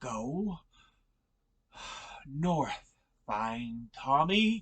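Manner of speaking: breathless, trembling, slow, shaky, labored voice. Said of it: "his voice is so shaky where he's trying to talk".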